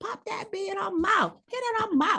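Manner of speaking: very high, squeaky little devil character voice. Acting out the devil on the other shoulder, voicing the devil on the shoulder. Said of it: "The devil over here is like".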